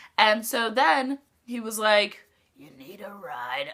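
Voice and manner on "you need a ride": put-on deep raspy smoker voice, much lower, quieter. Retelling how an old man who followed them offered a ride, imitating a deep, raspy smoker's voice. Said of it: "like in the deepest, raspiest, like smokes twenty packs a day voice".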